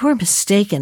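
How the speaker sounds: usual speaking voice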